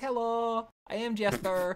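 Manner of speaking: very high, cute character voice. Explaining how Laura Bailey's tiefling character talks, in a Jester Lavorre voice. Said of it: "who talks like this".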